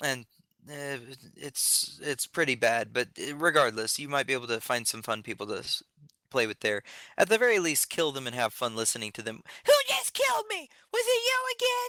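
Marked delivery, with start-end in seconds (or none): 9.7-11.9 put-on very high, squeaky small-child voice. Imitating a kid on voice chat who keeps getting killed: impression of a little kid. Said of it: "That was my impression of a little kid".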